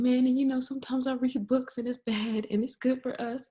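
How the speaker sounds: put-on crying, tearful little-boy voice, very high. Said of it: "he's really, like, crying".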